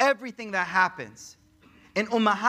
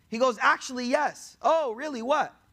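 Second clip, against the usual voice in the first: ordinary talk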